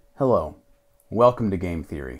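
very low, hushed documentary narrator voice. Asked on a podcast to show it off, the speaker uses his low documentary voice. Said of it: "can you give us your like low documentary voice?".

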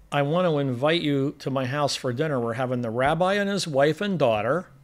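ordinary talk, nothing marked

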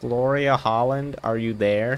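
slow, deliberate, put-on American accent. Calling out to a ghost by name, trying it in an american accent. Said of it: "Maybe if I try it with an American accent".

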